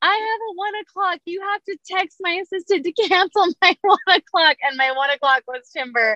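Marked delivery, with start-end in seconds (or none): 0.0-4.6 put-on frantic hollering, pitch raised. Retelling being put in a toboggan, yelling at the woman holding the phone: retelling a yell. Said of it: "And I'm yelling at Shelly".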